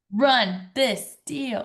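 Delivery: shouting it out. Answering a call to shout the three famous words: shouting it out. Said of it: "shout it out".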